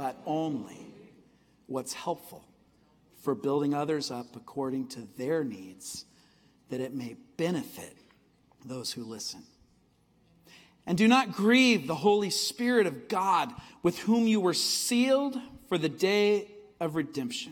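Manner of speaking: deliberate reading cadence, long pauses between phrases.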